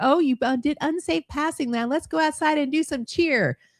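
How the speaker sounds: sweetest, sugary cheerleader voice, pitched very high. Host imagines the woman in a video as a former cheerleader pulling someone over; imitating a sweet cheerleader. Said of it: "She sounds like the sweetest chick on the planet".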